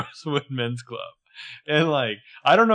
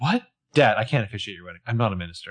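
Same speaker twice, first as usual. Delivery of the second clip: acted, offhand, nonchalant, dismissive tone; 4 semitones lower than usual. Retelling a character refusing her dad's request: imitating Aria, nonchalant dismissal. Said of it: "with such glorious, nonchalant dismissal".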